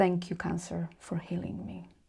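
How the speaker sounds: mock whispering. Retelling walking out of the hospital, thanking cancer: imitating own whisper. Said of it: "and I whispered to myself".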